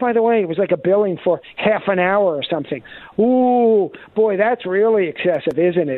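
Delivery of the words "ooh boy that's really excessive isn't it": mocking, ironic, dry sarcastic tone. Commenting on a half-hour bill, sarcastic. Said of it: "I say sarcastically".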